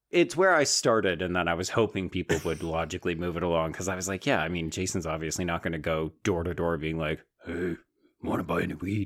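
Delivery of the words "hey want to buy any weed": creepy villain voice, like a horror puppet. Imagining a would-be dealer going door-to-door, the speaker slips into a Jigsaw voice. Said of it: "that's my Jigsaw voice".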